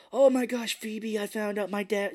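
put-on high, drugged voice. Retelling a movie scene, the mom in the car: imitating someone high on ecstasy. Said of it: "on ecstasy".

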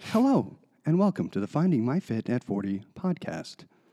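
calm, slightly boring, scientific public-radio host voice. Demonstrating how to open the podcast, in an NPR-style radio voice. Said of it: "That sounded very much like NPR".

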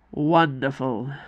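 muttering. Icarus, after Mardi says his wife has a plan: muttered. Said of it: "muttered Icarus".

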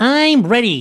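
very high-pitched cartoon-style voice. Answering the game master that he is ready: SpongeBob voice. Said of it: "Not SpongeBob".

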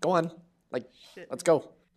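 curt, bossy, high-pitched, rude snapping. Voicing a director giving an order: snapping rudely. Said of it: "kinda snap".

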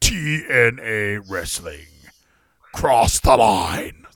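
low, deep, ominous promo-announcer voice. Recalling early wrestling promos, the speaker imitates them: TNA Wrestling promo voice. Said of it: "when they were like".

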